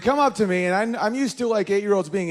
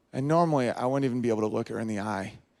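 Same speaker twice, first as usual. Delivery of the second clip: ordinary delivery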